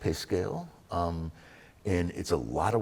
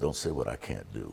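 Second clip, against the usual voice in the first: put-on mutter under the breath, lower voice; 8 semitones lower than usual. Retelling a line from a reality show: imitating a mutter under the breath. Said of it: "he said under his breath".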